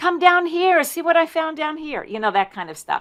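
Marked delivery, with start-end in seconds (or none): 0.0-2.0 put-on shrill, very high, loud children's hollering. Retelling children in a blueberry field calling to each other: imitating kids hollering. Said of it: "hollering at each other".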